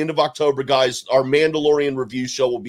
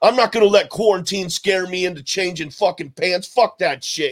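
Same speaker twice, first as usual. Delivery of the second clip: put-on New York accent, higher; 4 semitones higher than usual. Retelling what someone said about not changing pants: imitating a New York accent. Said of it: "that New York accent and attitude".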